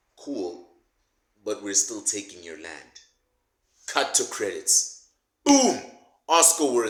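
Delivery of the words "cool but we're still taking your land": secretive, confiding, hushed stage whisper. Narrating an imagined movie scene, acting out a character leaning in to half-whisper. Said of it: "Julius leans in and then he whispers".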